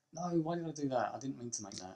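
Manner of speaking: panicked, flustered outburst. Realizing they crafted the wrong thing by mistake: panicking.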